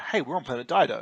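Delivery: ordinary delivery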